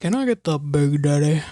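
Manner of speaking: low, deep man's ad announcer voice. Telling listeners how to order at a restaurant, speaker says it in an Arby's guy voice. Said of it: "You do a really good man voice".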